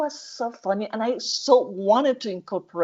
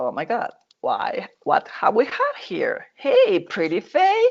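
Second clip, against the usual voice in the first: put-on flirtatious voice, swooping and drawn out. Retelling a scene where a pirate meets her rescuer: flirting. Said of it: "So she starts hitting on him".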